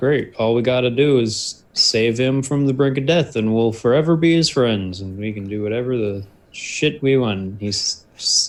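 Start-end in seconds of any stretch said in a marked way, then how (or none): 0.0-7.6 done-with-it, fed-up sarcasm. A player voices his character Ramos, who is done with it all: sarcastic. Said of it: "he's entering a bit of a sarcastic mood".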